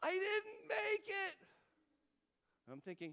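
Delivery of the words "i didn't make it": put-on sobbing little girl voice, very high, loud, slow. A father retells what his little girl said when he got upstairs: imitating a little girl crying. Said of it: "she's tearing up, and she's crying. She goes".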